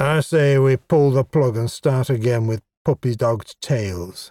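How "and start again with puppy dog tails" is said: ordinary delivery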